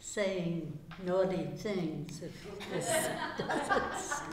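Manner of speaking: laughing while speaking, wide-ranging pitch.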